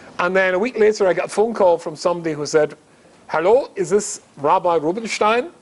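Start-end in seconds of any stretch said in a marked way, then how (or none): 3.3-5.4 put-on German-accented voice. Retelling a phone call from someone in Zurich, imitating Mark's German accent. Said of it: "In this German accent".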